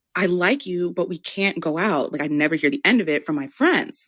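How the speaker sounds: low, hushed confiding voice. Retelling how a classmate turned down a date: imitating him lowering his voice. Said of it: "he lowered his voice".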